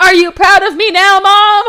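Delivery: high, shrill, loud yell. Recapping a story, the speaker acts out Morgana yelling to the sky: imitating Morgana yelling. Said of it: "Morgana yells to the sky like".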